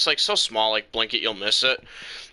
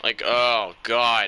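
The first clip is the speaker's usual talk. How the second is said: usual speaking voice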